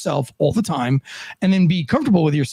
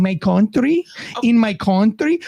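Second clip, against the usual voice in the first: slow, drawn-out, affected put-on Spanish accent; 4 semitones higher than usual. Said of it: "talking like she from Spain".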